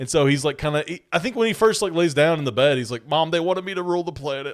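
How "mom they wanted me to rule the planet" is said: put-on distressed, troubled, really upset voice. Acting out a distressed line to his mother: imitating someone really upset. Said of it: "really upset".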